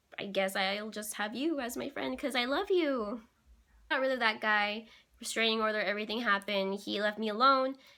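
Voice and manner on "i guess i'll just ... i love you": usual speaking voice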